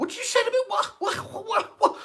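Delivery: very high, loud, shrill screaming. Retelling a woman shouting at the speaker through a bus window; imitating someone screaming. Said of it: "she's screaming through the window of the bus".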